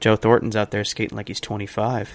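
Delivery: grave, hushed, low, very quiet, serious voice. Quoting a Game 4 remark, doing a quiet, serious Pierre Maguire voice. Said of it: "he does that really serious voice where he's kind of quiet".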